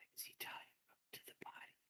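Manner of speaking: very soft, hushed, secretive whisper. Voicing a woman who leans forward so only you could hear, whispering. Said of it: "she leans forward and she whispers to you".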